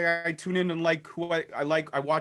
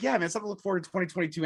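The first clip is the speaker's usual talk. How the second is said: mock easygoing, always-positive, upbeat cheer; 3 semitones higher than usual. Imitating a cohost's upbeat comment: imitating Anthony being positive. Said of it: "Anthony's like".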